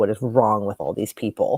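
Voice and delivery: ordinary talk, nothing marked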